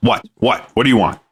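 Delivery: put-on short, irritated tone. Retelling how coworkers answer when approached: imitating a curt, annoyed reply. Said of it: "they're getting real short and chesty".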